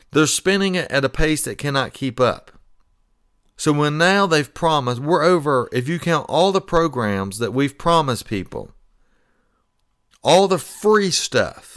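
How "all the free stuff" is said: word free stressed, drawn out high and slow. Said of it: "I keep emphasizing that word free".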